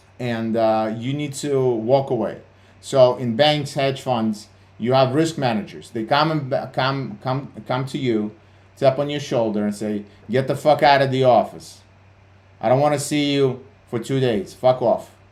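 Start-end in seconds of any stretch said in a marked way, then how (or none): 10.3-15.1 put-on blunt, curt delivery. Retelling how risk managers order a trader out: imitating a blunt risk manager. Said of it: "That's how they talk".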